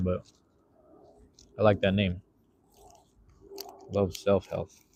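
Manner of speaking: talking while chewing. Chatting to viewers from the park, the speaker keeps talking while chewing. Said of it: "Excuse me for chewing and talking".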